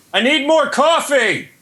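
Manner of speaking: shrill, very high, shouted yell. A podcast guest on Skype calls out to their wife: yelling. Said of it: "I'm yelling to my wife".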